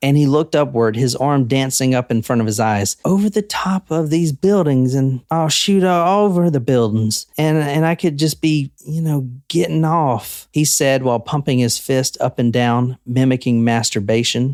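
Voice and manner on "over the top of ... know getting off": dreamy, faraway, lost-in-reverie musing tone. Reading out an arsonist's words, imitating his soft-spoken dreamy way of talking. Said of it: "So I'm gonna try it".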